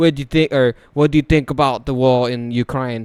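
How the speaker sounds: British accent, put-on. Retelling what a British guy asked in a Twitter space: imitating a British accent. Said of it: "in his stupid fucking accent was like".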